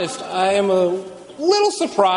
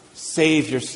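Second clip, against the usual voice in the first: mock sneer, much lower pitch; 7 semitones lower than usual. Retelling how the rulers taunted Jesus in the passage, with a mock sneer. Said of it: "The rulers sneered".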